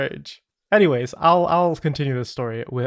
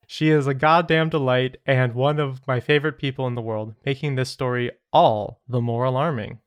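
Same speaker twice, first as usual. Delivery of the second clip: normal talking voice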